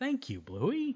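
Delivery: very high-pitched, sincere voice. Retelling a cartoon scene, quoting the dad: imitating Bandit, sincere. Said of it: "he just sincerely says".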